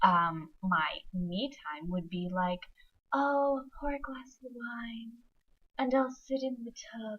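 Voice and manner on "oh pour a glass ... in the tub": mock-sexy, sultry, luxurious put-on voice, pitched up. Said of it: "This is my sexy voice".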